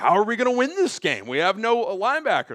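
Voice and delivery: play-acted, heavily sarcastic, swooping delivery. Retelling a locker room post-game speech: sarcastic Ben Johnson impression. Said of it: "kinda sarcastically said it".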